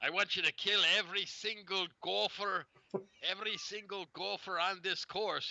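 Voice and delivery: put-on very high, slow, drawn-out Scottish accent. Speaker quoting a movie groundskeeper giving an order: scottish accent impression. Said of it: "he had that Scottish accent".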